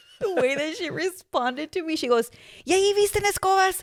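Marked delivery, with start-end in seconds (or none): 2.7-3.8 frustrated, fed-up, higher-pitched tone. Retelling a mother's reply while shopping for jeans: imitating frustrated mom. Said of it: "my mom must have been frustrated that day".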